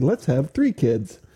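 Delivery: put-on, heavily sarcastic, dripping with sarcasm. Retelling what he says to a passenger in a car full of kids, very sarcastic. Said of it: "And I say that in a very sarcastic tone".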